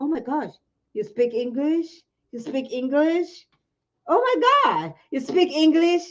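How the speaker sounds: patronizing, condescending, amazed astonishment. Retelling how Americans react to an African accent: imitating surprised Americans. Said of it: "But then when they hear an African accent".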